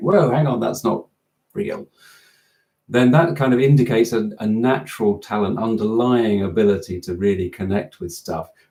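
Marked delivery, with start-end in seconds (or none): none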